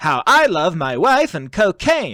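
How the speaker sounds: slow, rhythmic borrowed cadence, leaning on rhythm. Showing a quick impression while talking about impressions: John Mulaney impression. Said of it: "my John Mulaney is just".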